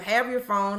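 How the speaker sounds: ordinary talk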